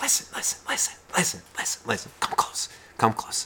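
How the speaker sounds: hushed, breathy whisper close to the microphone. Picturing someone calling the listener close, imitating a whisper into the microphone. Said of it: "whispers into the microphone".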